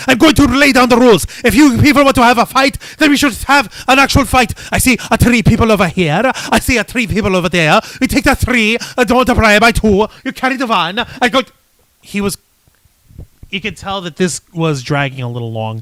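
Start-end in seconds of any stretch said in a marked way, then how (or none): 0.0-11.0 acted wrestler-style character voice. Retelling what Santina Marella said in the ring: imitating Santina Marella. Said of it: "Santina Marella came out to the ring and he was saying, like".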